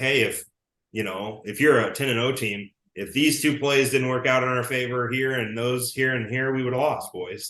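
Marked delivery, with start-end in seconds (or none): none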